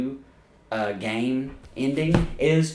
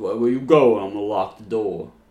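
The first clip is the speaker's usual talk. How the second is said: lower, mumbling, put-on tough-guy voice; 4 semitones lower than usual. Doing a Rocky-scene bit: Sylvester Stallone impression. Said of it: "the Sylvester Stallone accent".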